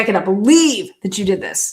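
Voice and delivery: play-acted angry, fuming, indignant disbelief. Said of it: "She was so mad".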